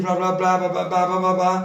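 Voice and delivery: flat, unchanging monotone drone. Imitating a teacher who keeps the same tone of voice: monotone teacher droning. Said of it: "um professor que tem o mesmo tom de voz, aquele".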